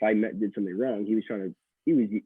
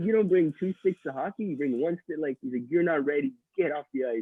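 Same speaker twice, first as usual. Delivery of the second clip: mock yelling, higher; 6 semitones higher than usual. Retelling how a coach yelled at a late player: imitating a coach yelling. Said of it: "And he started yelling".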